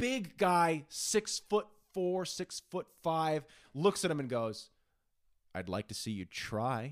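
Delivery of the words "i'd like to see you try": low, slow, badass and defiant. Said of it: "Oh, badass".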